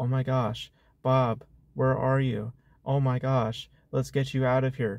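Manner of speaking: mocking, soft-spoken, flat delivery. Retelling a film's rescue scene, imitating soft-spoken flat delivery. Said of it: "she's still on the same energy".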